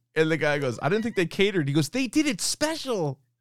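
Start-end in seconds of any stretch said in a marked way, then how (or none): 1.9-3.1 play-acted thrilled delivery, very high and excited. Quoting a minor actor's line from a surprise-party scene, imitating excited delivery. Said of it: "He's so excited to deliver that news".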